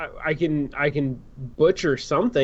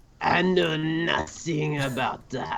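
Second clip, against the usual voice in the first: put-on French accent, film-noir style; 4 dB quieter than usual. Asked to read his line, he reads it in a noir french voice. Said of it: "read this in your most noir French voice".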